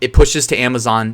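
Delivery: ordinary delivery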